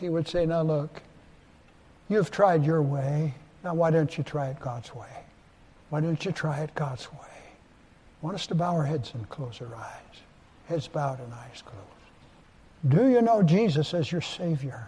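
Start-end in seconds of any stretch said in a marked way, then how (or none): 0.5-7.2 kindly, gentle, coaxing pleading tone. Retelling an old evangelist's invitation: imitating Harry McCormick Lentz saying it kindly. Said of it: "he'd say it so kindly".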